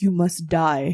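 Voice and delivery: very deep, throaty guttural rumble. Telling the others what he just says, very deep guttural voice. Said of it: "in this very deep and guttural voice".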